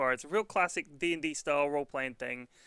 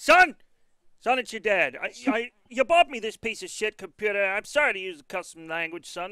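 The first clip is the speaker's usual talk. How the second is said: put-on loud, grouchy, higher-pitched old-timer griping voice; 6 semitones higher, 7 dB louder than usual. Joking about complaining about computers, playing a dad: pretend old man complaining. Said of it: "complaining about computers like an old man".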